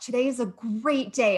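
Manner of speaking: high-energy, thrilled, excited, pumped-up. Showing how delivery changes a sentence, saying it with excited, pumped-up delivery. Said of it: "I'm so excited".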